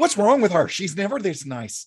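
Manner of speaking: put-on Irish accent. Riffing on movie lines with others, the speaker says this in a put-on irish accent. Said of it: "That's actually the best accent you've ever done".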